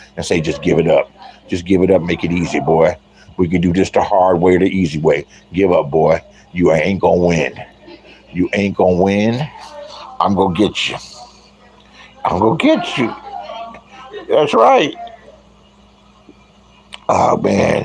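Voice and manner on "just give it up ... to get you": stage whisper, half-whispered and close. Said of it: "he's whispering in your ear".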